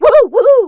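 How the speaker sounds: daffy, jerky cartoon whoop, very high, shrill, loud. Explaining how the voice was really done, demonstrating the Sylvester voice acting like a jerk. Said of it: "acting like a bit of a jerk or acting a little daffy".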